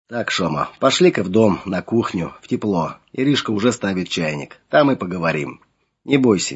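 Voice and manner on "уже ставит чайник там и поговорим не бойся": plain reading voice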